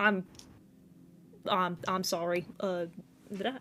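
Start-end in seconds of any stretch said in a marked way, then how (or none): 0.0-2.5 put-on New York accent with stumbling delivery. Narrating a character who opens the door on another character: New York accent. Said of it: "it's a New York accent".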